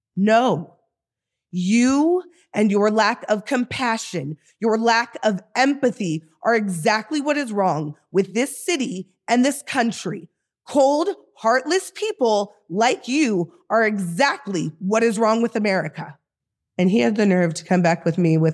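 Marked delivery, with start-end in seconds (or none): 0.1-16.1 acted-out heated, indignant, angry yelling. Speaker retells yelling back at a man who insulted an unhoused man, retelling a yell. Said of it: "I yelled".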